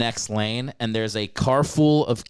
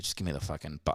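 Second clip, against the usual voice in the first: put-on solemn tone, lower and quieter; 7 semitones lower, 12 dB quieter than usual. Retelling what a former sweetheart said: imitating a solemn ex.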